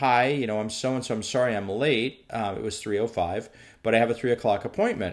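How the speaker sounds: ordinary delivery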